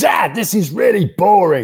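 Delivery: put-on shrill child's yell, very loud and high. Retelling what his five-year-old son yelled in a hushed crowd, imitating a child shouting. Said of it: "at the top of his lungs, shouted".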